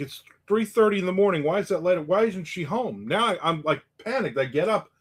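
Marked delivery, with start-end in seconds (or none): 0.0-3.1 put-on calling out, half-voiced and held back. Retelling waking in the dark and yelling for a spouse: retelling a yell. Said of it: "I'm yelling for my wife".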